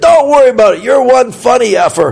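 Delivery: very loud hearty voice. Recounting how a man accepted their apology, retelling a very loud remark. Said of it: "he was very loud. He said".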